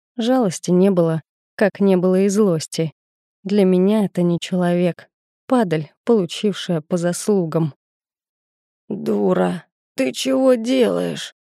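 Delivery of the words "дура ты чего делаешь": slow creaky groan. Narrator voicing an injured man on the ground, trying to move, groaning. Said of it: "простонал мужик".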